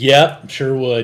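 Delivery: loud, slow and eager. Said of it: "I'm like".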